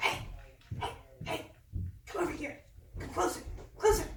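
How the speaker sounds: tiny, small, soft, hushed whispering voice. Narrating a scene, voicing a voice that calls a character closer, a little whispering voice. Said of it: "you hear a little voice whisper".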